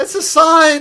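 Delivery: put-on crowd voice crying out. Voicing the onlookers who see a baby flying across the skies: voicing onlookers crying out. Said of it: "everybody looks and says".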